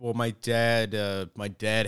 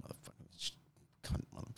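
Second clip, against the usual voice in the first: mock angry muttering, quieter. Retelling talking to oneself when really mad: imitating own angry self-talk. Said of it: "if I get really angry".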